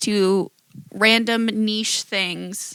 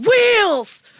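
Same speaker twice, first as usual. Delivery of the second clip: loud yell like a dad on the sidelines. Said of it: "and they yell".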